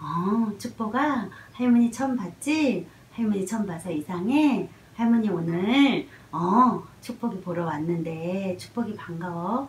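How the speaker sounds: gentle, friendly, relaxed, soft, kind, slow voice. Showing how the grandmother greets the baby: soft, kind, relaxed voice. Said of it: "부드러운 목소리로 아주 친절한 목소리로 그리고 아주 편안한 목소리로".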